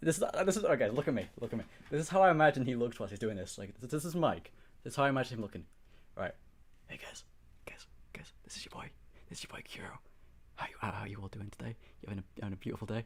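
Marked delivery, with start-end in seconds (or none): 6.9-13.0 very soft ASMR whisper. Imitating how he imagines the other person greeting viewers, in a soft ASMR voice. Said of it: "full on A S M R shit".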